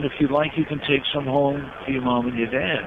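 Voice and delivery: ordinary talk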